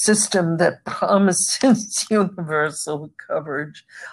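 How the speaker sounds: amused, breaking into laughter mid-sentence. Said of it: "I don't know why I'm laughing".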